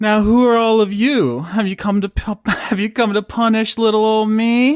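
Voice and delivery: very high, loud, disembodied-sounding voice. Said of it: "you hear a voice coming out of the gates".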